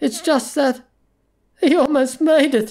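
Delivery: gasping through laughter. Reading a character's line as he breaks into laughter, gasping with laughter. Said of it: "he gasped".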